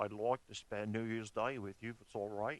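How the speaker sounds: put-on Australian-accented speech. Acting out an Australian asking to spend New Year with a family: Australian accent. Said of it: "he would say it like this".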